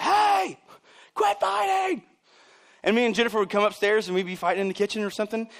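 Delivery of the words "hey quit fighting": play-acted very high, raspy, rough yell. Speaker recalls mom calling from downstairs at the speaker and Jennifer fighting, imitating mom yelling. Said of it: "she's yelling from downstairs".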